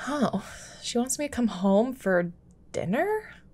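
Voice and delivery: sounding audibly upset. Sid, handed a letter from his mom, reacting to it, upset. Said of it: "Why do you sound so upset?".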